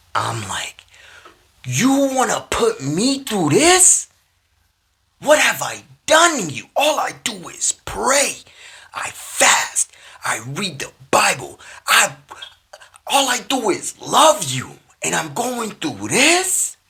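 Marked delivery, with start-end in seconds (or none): 1.7-16.7 acted, very high, swooping furious yelling. Retelling a drive in pain, cussing and yelling at God: retelling angry yelling. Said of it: "I'm absolutely just cussing, yelling".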